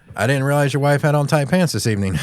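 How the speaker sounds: normal talking voice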